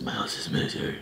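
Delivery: very quiet, hushed whisper in a dark hero voice. Retelling how dad answered a question about going off to the military, in a Batman voice. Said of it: "He would say in like that Batman voice".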